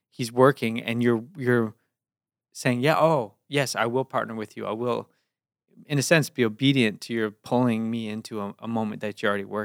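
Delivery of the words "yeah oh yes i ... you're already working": ordinary talk, nothing marked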